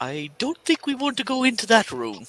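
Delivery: jittery, anxious, nervous, high and swooping. Voicing a nervous bird character shutting a door on a robed figure: nervous. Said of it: "with him being nervous".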